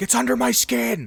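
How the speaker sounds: very high-pitched, raw, rough, unhinged yell. Quoting a crazy character from the game: imitating Sid yelling. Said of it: "It's him yelling".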